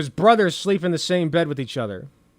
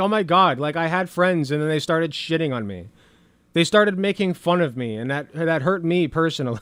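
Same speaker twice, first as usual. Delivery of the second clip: ordinary delivery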